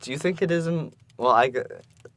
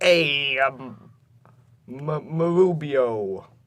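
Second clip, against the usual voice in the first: put-on Brooklyn accent, very slow, one word dragged out; 2 semitones higher than usual. Joking with friends about a lookalike, imagining him talking in a Brooklyn accent. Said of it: "he has like a, a Brooklyn accent and he's like".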